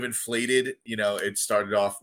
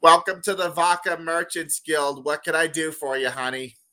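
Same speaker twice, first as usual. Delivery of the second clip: goblin receptionist voice, higher; 6 semitones higher than usual. Narrating a game scene as a player's character steps up: goblin receptionist voice. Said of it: "the goblin receptionist goes".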